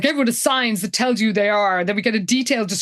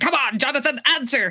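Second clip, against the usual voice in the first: barking, impatient urging tone; 4 semitones higher than usual. Retelling a character barking at the phone: imitating someone barking at a phone. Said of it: "is barking at the phone".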